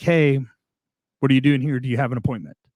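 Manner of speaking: grave, very serious, no-nonsense tone. Retelling how the gatekeeper stopped him each visit: imitating Jeff, very serious. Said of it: "Very serious".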